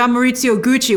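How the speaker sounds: usual speaking voice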